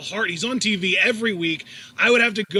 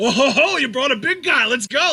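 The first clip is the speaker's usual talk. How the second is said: all fired-up, excited, stoked, pitched-up delight; 6 semitones higher, 4 dB louder than usual. Retelling a wrestler spotting his opponent on the ramp: imitating excited Brock Lesnar. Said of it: "Brock got all excited. He was like".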